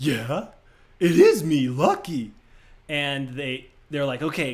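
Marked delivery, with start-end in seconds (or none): 0.0-2.3 dumb dog voice, loud, slow, drawn out. Retelling how an actor answers a lawyer as the dog: Lucky's dumb dog voice. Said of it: "he puts on the dumb dog voice".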